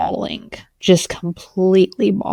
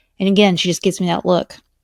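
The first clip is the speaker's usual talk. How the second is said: normal talking voice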